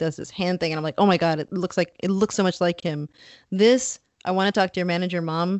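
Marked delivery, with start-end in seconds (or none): none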